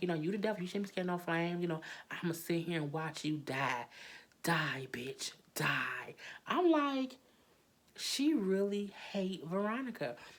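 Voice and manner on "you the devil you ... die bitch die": put-on taunting laughter, faster. Recounting what Melissa said to Veronica, retelling Melissa's laughing taunt. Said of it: "Melissa laughing like".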